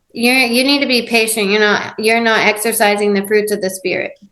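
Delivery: normal talking voice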